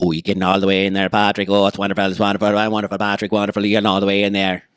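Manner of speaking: put-on Irish accent. Addressing Patrick, in an Irish accent. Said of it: "took on that Irish accent just then".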